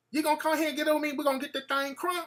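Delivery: put-on high, real country accent, laid on full. Retelling what a woman said to the speaker, in a country accent. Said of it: "she talked real country".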